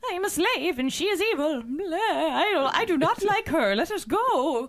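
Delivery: put-on high, very slow, girlish little-girl voice. Retelling what the little girl in the story says, little girl impression. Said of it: "you must also have a stunning little girl impression".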